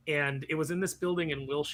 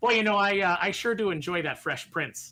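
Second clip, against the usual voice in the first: put-on plain, square Midwestern manner; 4 semitones higher, 4 dB louder than usual.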